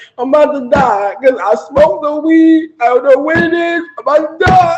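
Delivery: put-on sobbing through every word. Retelling a call to an aunt while high, imitating own crying. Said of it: "I'm literally crying like".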